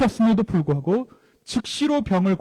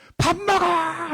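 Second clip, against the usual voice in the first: acted, very high, loud, shrill shout; 10 semitones higher than usual. Acting out a mother shouting to her son nearby, shouted. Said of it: "라고 소리를 지릅니다".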